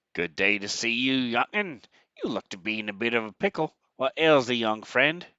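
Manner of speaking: put-on broad rural country accent, loud, laid on thick. Voicing a farmer greeting a traveler at a junction: thick country accent. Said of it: "He speaks in a thick country accent".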